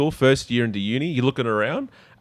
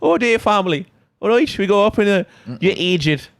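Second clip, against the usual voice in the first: put-on Irish accent, pitched up, words drawn out; 8 semitones higher than usual. Trying an accent after being asked about irish: put-on irish accent. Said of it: "Can you do, like, Irish?".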